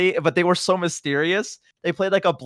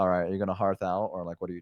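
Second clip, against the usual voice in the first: low, soft, flat, uninflected monotone; 9 semitones lower, 8 dB quieter than usual. Gamer retelling what fellow players said in a dungeon, imitating monotone talk. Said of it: "them talking like monotone".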